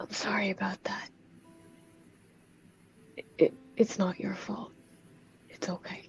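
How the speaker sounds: hushed, whispered murmur under the breath. Playing a character who touches a wall and apologizes: whispering under breath. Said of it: "just kinda whisper under my, under my breath".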